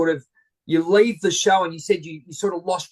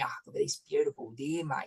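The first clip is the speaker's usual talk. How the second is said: whispered, close, hushed presenter voice; 3 semitones lower, 12 dB quieter than usual. Retelling spotting a deer in the Rocky Mountains, doing a Steve Irwin impression. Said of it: "Doing the Steve, good old Steve Irwin impersonation".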